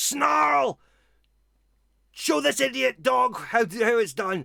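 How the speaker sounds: furious, very high, rough, rasping voice. Narrating a scene, the speaker voices a male calling from further in: angry male voice. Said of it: "you hear an angry voice".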